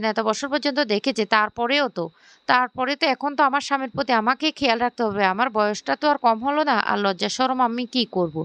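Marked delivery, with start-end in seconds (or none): none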